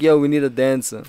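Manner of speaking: normal talking voice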